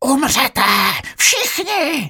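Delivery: very high, shrill, piercing creature screech. The narrator reads the line of a small caged creature, shrieking in a piercing voice. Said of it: "Ječí ta malá příšerka pronikavým hlasem".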